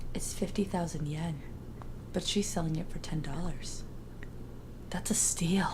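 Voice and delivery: very hushed, very quiet mutter. Quoting a favorite line from the first episode: quietly to herself. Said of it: "Alana just says really quietly to herself".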